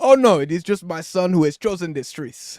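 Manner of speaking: loud, put-on Nigerian accent. Two friends joke, playing a parent scolding a son, in a put-on Nigerian accent. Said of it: "Here, I'll do it".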